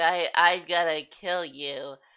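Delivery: weak little voice, very slow and drawn out. Describing a big character given a puny voice, in a weak little Masked Smith voice. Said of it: "they gave him such a weak little voice".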